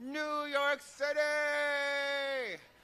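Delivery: exaggerated shrill, high belted yell with City drawn out. Recalling finally moving to New York City, announced in an Oprah impression. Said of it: "And I say it like that, New York City! My Oprah impersonation".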